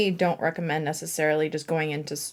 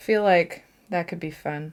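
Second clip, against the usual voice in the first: dry sarcastic tone, not meaning a word. Painting tutorial, suggesting going straight into the florals, sarcastic. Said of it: "That's my sarcastic voice".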